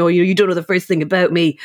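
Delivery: ordinary talk, nothing marked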